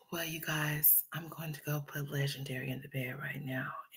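odd, faint, very hushed weird whisper. Speaker mimics an irritating woman talking to 'you guys', imitating someone's weird whispering. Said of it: "doing that weird ass whispering".

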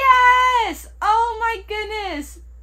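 very slow, drawn-out, loud, high excited scream. Opening the final capsule and finding the one they wanted: excited screaming. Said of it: "I'm sorry for screaming".

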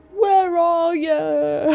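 put-on worried, high, slow, drawn-out wailing call.

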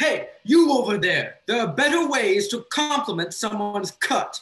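very loud, high-pitched yell. Tomax, feeling responsible for Frandolf, calls out to the man across the room, yelling.

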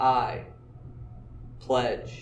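I, then a long pause, then pledge.

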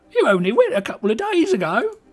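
put-on British woman's voice, very high. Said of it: "my British lady voice".

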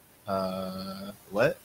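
usual speaking voice

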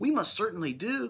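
very high, piping little voice. A voice from the dust speck answers a question, piping. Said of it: "piped the voice".

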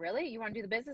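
fast, eager, thrilled, excited delivery. Retelling a friend's reaction during sign-up: imitating an excited friend. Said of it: "she got all excited".

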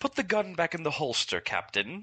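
flat, dismissive voice. Imagining how Kate Stewart would answer Captain Jack: imitating Kate Stewart shooting him down. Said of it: "You just kinda shoot him down".

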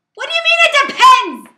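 very high, piercing, shrill, passionate full-volume yell. Wife reacting to her husband's answer about being buried with her, yelling. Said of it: "you need to stop yelling".

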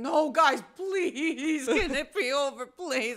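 put-on loud, high desperate pleading.

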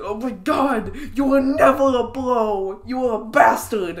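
outraged, high, drawn-out furious cursing. Retelling swearing at a game character who moved: imitating angry swearing. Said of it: "swearing at him profusely".

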